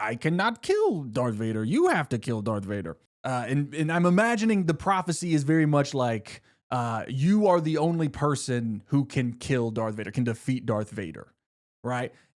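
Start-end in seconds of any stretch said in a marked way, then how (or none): 0.0-3.0 funny, comic little sage voice, swooping. Retelling what Yoda tells Luke, in a funny Yoda voice. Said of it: "in his funny Yoda voice".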